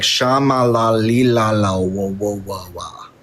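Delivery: very slow, limp, feeble babble of nonsense syllables. Imitating the other speaker's speaking in tongues: mocking imitation of speaking in tongues. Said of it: "You were like".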